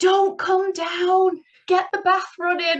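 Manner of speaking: very high, carrying, drawn-out shout. Retelling how the husband shouted up the stairs: imitating someone shouting. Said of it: "he just shouted up the stairs".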